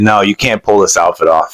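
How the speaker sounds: ordinary talk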